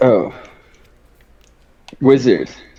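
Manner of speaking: deflated, let-down, disappointed "oh". Reacting to another speaker's podcast intro, sounding disappointed. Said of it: "you sounded so disappointed".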